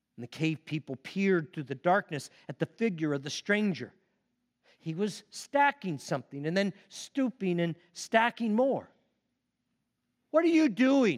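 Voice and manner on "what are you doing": anxious, nervous, pitched-up cry. A cave person calls to a stranger in the darkness, nervous cry. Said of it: "one cried, nervous".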